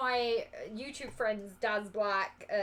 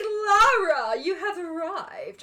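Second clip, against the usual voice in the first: very slow, grand, stagey, loud, high theatrical delivery; 9 semitones higher, 7 dB louder than usual. Retelling how theatre-kid co-actors greeted the speaker as Lara Croft, mimicking over-the-top theatre kids. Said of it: "And they were very over the top".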